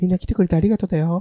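breathy, sweet, whispered voice. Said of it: "ウィスパーな感じで".

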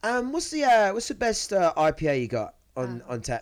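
put-on English accent. Ordering an IPA while pretending to be English, in a fake English accent. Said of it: "pretend like I was English".

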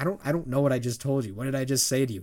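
ordinary talk

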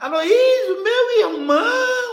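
put-on pleading voice. Retelling how a fellow worker asked for help: imitating a pleading voice. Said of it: "de pedido".

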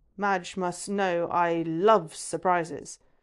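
slow, derisive, dripping with scorn and sarcasm. Reading a scene where Draco reacts to a surprise letter: dripping with derision and sarcasm. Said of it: "voice dripping with derision and sarcasm".

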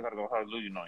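very soft, rushed, words run together. Showing how to give the church-night excuse for trick-or-treat: said fast. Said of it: "You say it fast".

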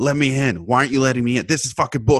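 put-on wild, frantic, all-out meltdown ranting. Acting out a maskless shopper filming at the door: imitating someone going nuts. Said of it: "going all nuts".

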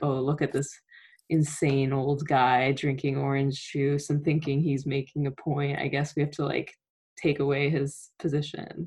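plain

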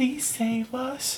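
put-on high voice of a small child. Describing voices heard coming from the bathroom, a little child's voice. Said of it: "voices from a little child going".

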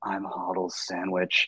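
soft, hushed half-whisper. Retelling how a stranger leaned over and half-whispered in his ear: imitating a half-whisper. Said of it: "he leans over and he whispers in my ear".

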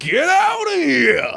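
high, loud, creaky, raspy, slow drawl. Acting out Lonnie breaching the water, in Lonnie's voice. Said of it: "that's how Lonnie's talking tonight".

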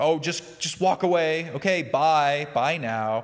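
high, loud shooing.

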